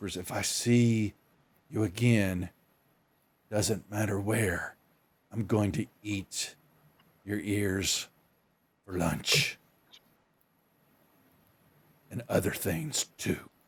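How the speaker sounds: very quiet, hushed, menacing, threatening half-whisper. Retelling a scene where she puts her back to the wall, half-whispering. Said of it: "she whispers".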